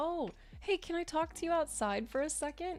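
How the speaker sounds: acted sugary-sweet, polite, very high voice. Retelling how a mom called a boyfriend outside: imitating mom speaking very sweetly. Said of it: "my mom just very sweetly".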